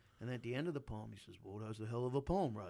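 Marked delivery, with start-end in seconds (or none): 1.4-2.7 cartoon-bear style delivery. Retelling a man's praise after a poetry reading, in a Yogi Bear voice. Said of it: "I'm making him sound like the yogi, the bear".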